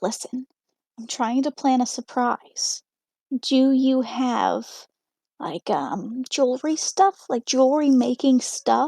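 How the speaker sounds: hushed whisper. Secretly asking a shop owner about a surprise: whispering to the shop owner. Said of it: "whisper to the, to the shop owner".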